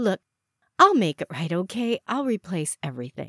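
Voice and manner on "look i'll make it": plain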